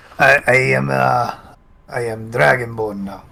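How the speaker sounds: Italian-sounding character voice. Playing a newly changed brass Dragonborn: Italian-sounding character voice. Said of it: "Why does he talk like that now?".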